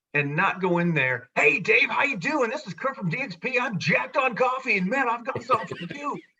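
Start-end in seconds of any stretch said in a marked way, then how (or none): 1.4-6.2 over-the-top, high, hyped monster truck announcer voice. Demonstrating how not to open a call to a prospect: monster truck rally announcer voice. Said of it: "It's not the Sunday night monster truck rally voice".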